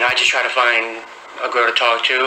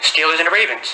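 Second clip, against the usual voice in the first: snappy, quick, self-assured and confident; 4 semitones higher than usual. Asked who's playing tonight, answering quick and confident. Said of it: "He said that so quickly and with so much confidence".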